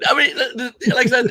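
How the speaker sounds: high, loud laughing through the words.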